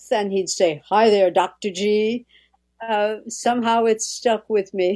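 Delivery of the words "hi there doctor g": put-on, deep male radio voice. Retelling a radio man's greeting: imitating a deep radio voice. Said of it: "his voice was at depth".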